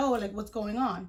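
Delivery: ordinary talk, nothing marked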